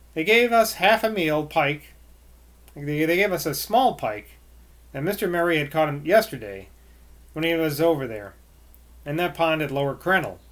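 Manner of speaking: ordinary talk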